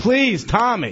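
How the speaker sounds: mock pleading, near tears, almost crying. Retelling being attacked and begging him to let go: imitating own near-crying plea. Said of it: "I was almost crying and saying".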